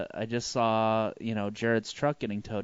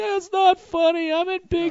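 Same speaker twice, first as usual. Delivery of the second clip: put-on little girl crying, much higher, louder; 8 dB louder than usual. Retelling a drunk phone call while friends laughed, imitating crying like a little girl. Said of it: "I start crying like a little girl".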